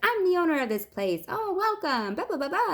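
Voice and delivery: put-on very high, bubbly, peppy voice. Retelling how the owner greeted the speaker at the facility: imitating a happy, peppy woman. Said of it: "happy, peppy woman".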